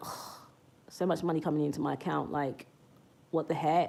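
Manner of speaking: playful, teasing fake annoyance, eye-rolling exasperation. Showing how a playful line sounds, mock eye-rolling exasperation. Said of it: "It's kind of playful. It's kind of like you're rolling your eyes about it".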